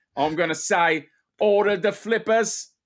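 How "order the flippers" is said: put-on Australian-accented speech. Writing a line to make Ben Stone feel at home, Australian accent. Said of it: "in my own Australian accent".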